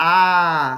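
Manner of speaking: loud "ah" vowel dragged out long. Sounding out a word, dragging the vowel into a drawn-out ah. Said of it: "we have to drag out the vowel sound like ah. You hear that?".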